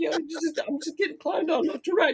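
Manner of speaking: hurt tone, pitched way up high. Imitating Sean Bean hearing a joke about him: imitating Sean Bean sounding hurt. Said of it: "He's hurt".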